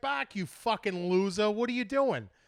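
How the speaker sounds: put-on loud, high-pitched, teasing Boston accent. Acting out how he'd greet someone he runs into, in a boston accent. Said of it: "You got that Boston accent too".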